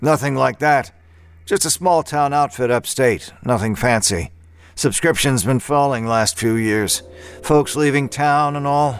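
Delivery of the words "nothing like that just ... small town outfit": usual speaking voice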